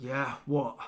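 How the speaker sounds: gruff, obviously irritated, annoyed tone. Voicing the one picking up the call: gruff, obviously annoyed voice. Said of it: "this kind of gruff, obviously annoyed voice".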